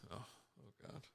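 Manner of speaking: whispered, breathy, hushed, all-nervous fretting murmur. Reacting to an offer of swag for out-of-state guests: mock nervous. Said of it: "you sound like you're all nervous".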